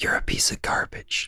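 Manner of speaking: soft, unvoiced, mean, insulting ASMR-style whisper. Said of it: "I wanna do it where it's, like, the opposite".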